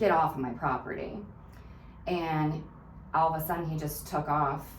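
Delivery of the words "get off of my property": usual speaking voice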